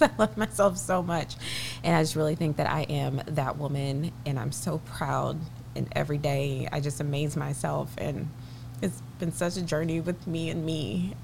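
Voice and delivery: almost crying while gushing. Talking about herself, about to cry. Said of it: "And I'm about to cry".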